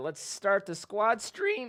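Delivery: voice cracking and breaking up mid-line. A streamer starting a squad stream, with his voice cracking. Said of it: "What is with my voice?".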